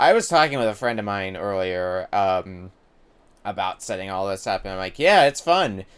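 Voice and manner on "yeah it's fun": play-acted dripping sarcasm, raised and pitched up. Recalling telling a friend about setting all this up, sarcastic. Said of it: "as I say sarcastically".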